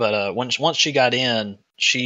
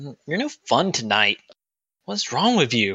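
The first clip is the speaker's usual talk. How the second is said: mock annoyed, scowling tone. Describing how a woman reacted to him, retelling her scowling complaint. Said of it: "kind of gives a little scowl and goes".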